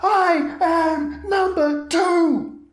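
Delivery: very high, slow, drawn-out screamed yell. Voicing a creature that yells and screams during a fight: character yelling and screaming. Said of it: "yelling and screaming".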